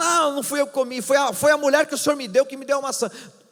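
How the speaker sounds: high, sing-song whine.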